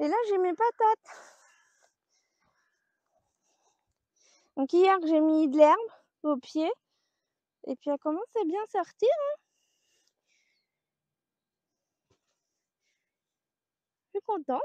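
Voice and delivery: breathless, out of breath. Showing the vegetable garden while talking, out of breath. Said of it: "Désolée si je suis essoufflée".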